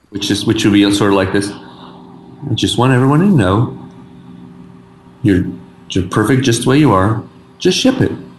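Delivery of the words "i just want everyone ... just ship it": calm, soothing, reassuring voice, slower pace. Workshopping versions of a line with others, trying the calm bedside-manner voice. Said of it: "I could do the like bedside manner calm voice".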